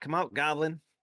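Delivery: high, loud shouted call. In the game, the speaker's character calls toward a goblin, yelling out. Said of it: "I'll yell out".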